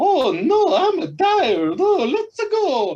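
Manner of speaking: very high, slow, swooping, drawn-out cartoon voice. Describing what Mario sounds like in the games: Mario voice. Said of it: "Mario has that".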